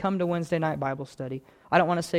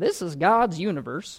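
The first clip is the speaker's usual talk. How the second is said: put-on slow little old man voice. Recalling an old man on the radio, trying his little old man voice. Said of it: "he had this little old man voice. I'm going to try to do the voice".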